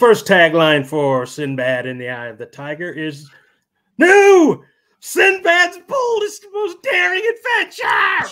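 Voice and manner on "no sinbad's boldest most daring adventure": very high, shrill, booming movie-trailer yell. Reading the first tagline for a movie aloud to the others; yelling a trailer tagline. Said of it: "if I keep yelling like that".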